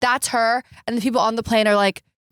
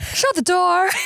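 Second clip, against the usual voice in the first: put-on high, old-movie transatlantic leading-lady voice; 8 semitones higher than usual. Imagining a transatlantic movie scene with the other speaker, in a transatlantic movie voice. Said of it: "such a good voice you're doing".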